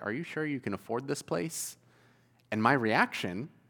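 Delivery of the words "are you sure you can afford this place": play-acted, hushed, very quiet, playful joking tease. Retelling what the pastor's daughter's wife asked him when they went out: imitating a joking tease. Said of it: "she jokingly looked at me and said".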